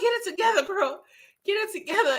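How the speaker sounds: laughing while talking. Telling themself to get it together: laughing while talking. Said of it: "cracking up like this".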